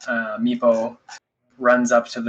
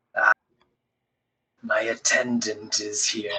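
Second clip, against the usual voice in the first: deep, soft dragon voice; 5 dB quieter than usual. A narrator voices a dragon answering from around the hall's corner, in a deep draconic voice. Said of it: "another deeper draconic voice".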